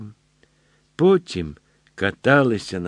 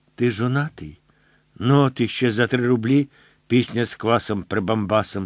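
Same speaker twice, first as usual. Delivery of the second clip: ordinary delivery, nothing marked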